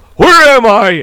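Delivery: put-on very high-pitched, loud shout. Telling a family story, acting out someone yelling from another room: retelling a yell. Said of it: "that's when he yelled".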